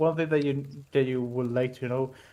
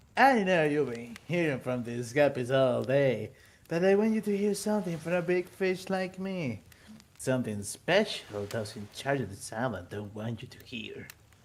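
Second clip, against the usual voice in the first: smarmy, sleazy, flirtatious come-on voice, laying on charm; 7 dB quieter than usual. Voicing Trickster flirting at the fire: fuckboy voice. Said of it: "I imagine him with the fuckboy voice".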